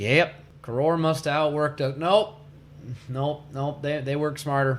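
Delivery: normal talking voice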